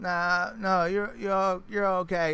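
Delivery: put-on slurring voice. Retelling what a customer said after a food delivery: imitating a slurring woman. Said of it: "slurring and just kinda".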